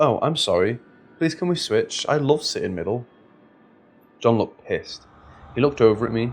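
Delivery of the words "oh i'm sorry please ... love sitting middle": ordinary delivery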